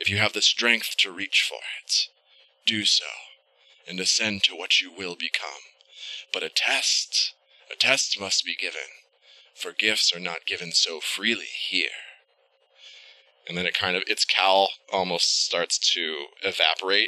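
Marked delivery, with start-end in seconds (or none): 0.0-11.9 very gravelly, low, snake-like hissing voice. Voicing a cowled figure speaking to young ones: very gravelly, low snake-like voice. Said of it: "this voice sounds almost like, like how a snake sounds moving across the ground. It's very gravelly, and it's very low".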